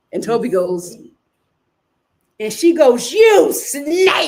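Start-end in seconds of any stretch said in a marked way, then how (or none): 3.1-4.3 play-acted heated, frustrated outburst, pitched up. Retelling how a contestant accused another: imitating a heated outburst. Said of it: "she was heated".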